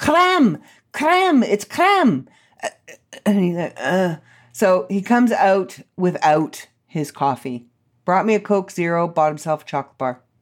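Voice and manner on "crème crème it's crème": acted-out very high, swooping, drawn-out yell. Recounting yelling at him from the car: retelling a yell. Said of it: "I'm yelling at him from the car".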